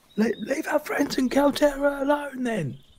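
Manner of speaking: very high, shrill yelling. Voicing Lovejoy calling from behind the wall to the group: Lovejoy yelling. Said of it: "Lovejoy yells from behind the wall".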